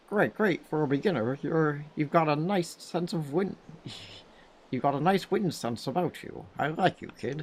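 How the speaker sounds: high frog voice. Voicing Zephos, god of winds, addressing the new Wind Waker, in a frog voice. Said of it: "That's the best frog voice I can do".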